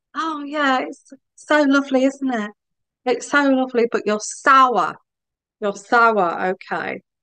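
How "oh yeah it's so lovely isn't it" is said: fake, syrupy, sugary put-on sweet voice. Calling out a sour person's fake niceness by mimicking them: mock-sweet voice. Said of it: "you put on this sweet voice".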